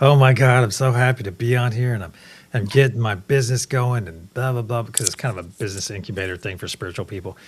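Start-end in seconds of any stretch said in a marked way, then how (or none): 0.0-4.1 loud, stoned-sounding, totally baked chatter. Retelling what a lady said on an online conference: imitating a stoned woman. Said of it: "she is freaking baked when she comes on".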